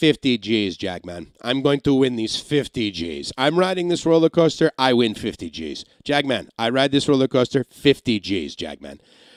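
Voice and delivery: put-on poorly done, butchered Russian accent.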